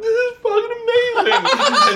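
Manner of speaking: mock very high, weepy, teary, drawn-out crying voice. Retelling a reaction to a comedy special on TV: imitating Leanne crying. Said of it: "Leanne's crying, going like".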